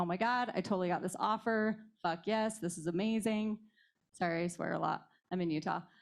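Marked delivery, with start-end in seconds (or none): none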